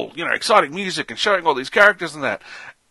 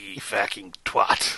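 gruff, breathy, rough-edged character voice breathed out; 5 semitones lower, 5 dB quieter than usual. After being asked to do the voice, Roy Kent voice. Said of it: "Can you do the voice?".

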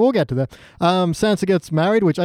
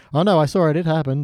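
plain

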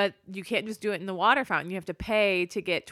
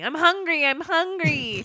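put-on very high, loud, whiny kid voice; 9 semitones higher, 6 dB louder than usual. Describing a kid with an empty tray arguing with the lunch marm, imitating a whining kid. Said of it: "It's whining".

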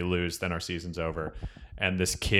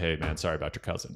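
put-on calmer, less angry tone, quieter; 3 semitones lower, 6 dB quieter than usual. Retelling apologizing to a kid later in the game, acting out a less angry remark. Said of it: "I wasn't as angry".

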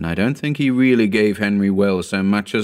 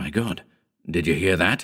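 usual speaking voice

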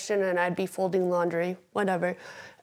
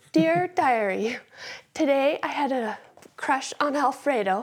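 put-on higher-pitched voice of a thirteen-year-old; 6 semitones higher than usual. Retelling own journaling from recovery, imitating a thirteen-year-old. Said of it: "my writing would sound like I was thirteen years old".

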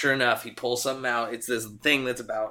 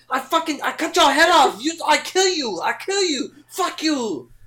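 mock threatening male yell, much higher, louder; 7 dB louder than usual. Retelling what a man in a car yelled at the group: imitating him yelling threats. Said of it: "he just yelled at us".

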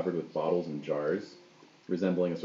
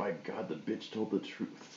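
very quiet, breathy mumble, nearly whispered; 2 semitones higher, 11 dB quieter than usual. Voicing a character transfixed by blood on the floor: mumbling. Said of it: "he sort of mumbles".

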